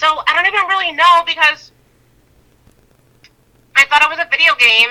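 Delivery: talking with mouth full. Answering a question about the story of Siren Head, talking with mouth full. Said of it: "I'm sorry, I'm eating".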